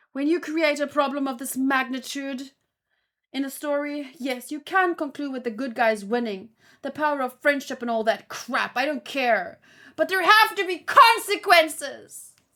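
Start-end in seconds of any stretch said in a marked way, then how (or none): 10.0-12.3 exaggerated theatrical, very loud, high dramatic delivery. Reading aloud someone's all-caps typed complaint: dramatized all-caps reading. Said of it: "I'm dramatizing it because he".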